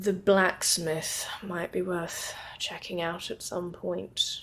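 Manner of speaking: under the breath. A role-play character, making a show of being tired before bed, speaks to Miss Sinclair under the breath. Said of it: "more under my breath will say".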